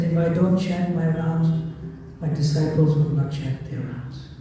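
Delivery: ordinary talk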